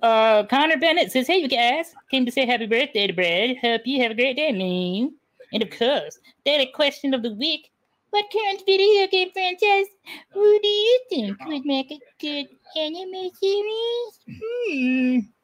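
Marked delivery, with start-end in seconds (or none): 1.3-15.2 goofy, high-pitched, silly put-on voice. A host reads a viewer's chat message aloud, in a funny put-on voice. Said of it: "What's with the voice?".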